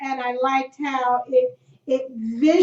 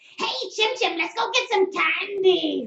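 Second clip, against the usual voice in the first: pitched-up cartoon voice, "candy" stretched; 6 semitones higher than usual. Recalling a high-school nickname earned from doing the Spritle voice. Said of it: "I was actually good at doing the Spritle voice".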